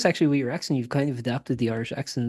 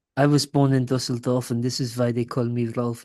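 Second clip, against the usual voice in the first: put-on German accent. Asked to do a German accent, quoting a line from a movie in German accent from The Producers. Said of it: "Give me like your German accent".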